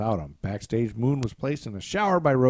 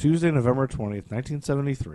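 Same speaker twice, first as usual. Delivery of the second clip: ordinary delivery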